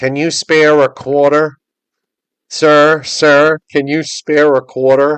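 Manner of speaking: loud, thick, really nasal voice. Imitating a woman begging for quarters at a subway station, really nasal voice. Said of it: "she talked in a really nasally voice".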